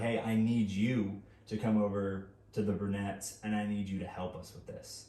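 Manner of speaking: usual speaking voice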